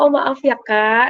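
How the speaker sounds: very slow, drawn-out, polite and hesitant delivery.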